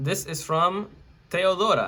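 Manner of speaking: name pronounced with Spanish accent. Reading out the sender's name on a listener question: Spanish accent. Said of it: "I think I said that with a Spanish accent".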